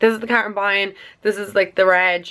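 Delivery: ordinary talk, nothing marked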